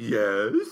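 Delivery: put-on speaking with mouth stuffed full. Retelling being asked a question while drinking a milkshake: chocolate eating voice. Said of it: "That's my chocolate eating voice".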